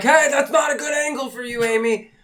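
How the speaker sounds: very high, shrill, loud screaming shout. Retelling watching someone from a tree, imitating own screaming. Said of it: "I'm screaming at the window".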